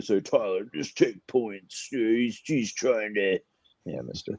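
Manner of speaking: unusually low, deep voice. Talking to tyler about taking the points, in an unusually low voice. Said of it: "That was a pretty low voice for [name]".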